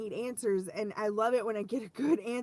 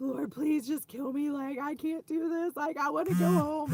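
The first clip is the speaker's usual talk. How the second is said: mock crying, high, tearful, pleading voice; 5 semitones higher than usual. Retelling a prayer made while sick the other night: retelling a crying plea. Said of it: "And I'm crying".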